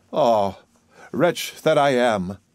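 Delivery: sighing. A narrator reads her line to the fiddler at a great city, sighing. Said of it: "sighed she".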